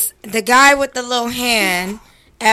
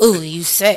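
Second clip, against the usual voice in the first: creepy, put-on lusty voice; 4 semitones lower than usual. Showing how a line sounds said like him, in a put-on lusty voice. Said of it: "If you say it in the lusty voice like him".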